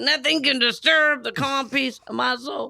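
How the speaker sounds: angry, through clenched teeth. Retelling a friend trying to speak while mad: imitating talking through clenched teeth. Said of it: "her teeth are kind of together".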